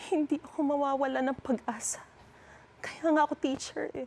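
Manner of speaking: sorrowful. Put on the spot, speaker acts a scene on cue after 'action!', sad. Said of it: "ito ang emotion. Malungkot".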